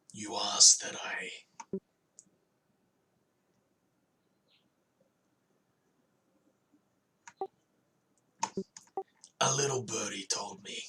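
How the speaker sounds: very soft, very quiet hushed voice. In a role-play, asked where they heard a name, the character answers very quietly. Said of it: "Again, very quietly".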